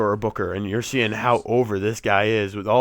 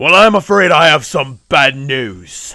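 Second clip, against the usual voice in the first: booming, slow, deliberately bad delivery; 4 semitones higher, 9 dB louder than usual. Answering who should win the Royal Rumble: awful Wade Barrett impression. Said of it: "I know that was an awful impression".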